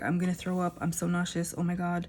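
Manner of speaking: ordinary talk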